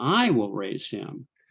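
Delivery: strong emphasis on the word "I". Showing emphasis through voice inflection: stress on the word i. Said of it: "Another way you could do it is voice inflection".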